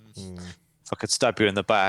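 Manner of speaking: ordinary talk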